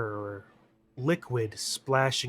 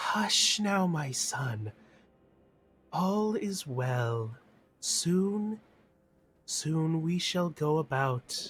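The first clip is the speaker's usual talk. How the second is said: gentle, soft, motherly, soothing, comforting voice; 3 semitones higher than usual. Narrating an unseen voice soothing a crying baby, in a soft, mothering, comforting voice. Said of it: "a soft, almost mothering, comforting voice".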